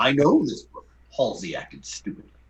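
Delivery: animated performed voice, swooping sing-song pitch. Told the others want to hear it, a speaker does his impression.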